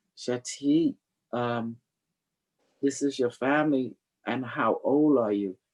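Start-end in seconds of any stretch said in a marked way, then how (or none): none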